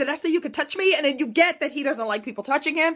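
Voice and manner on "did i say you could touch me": mock freak-out, acted panicked outburst. Recapping a scene where he snaps at her for touching him, retelling a freak-out. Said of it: "he loses it and starts freaking out".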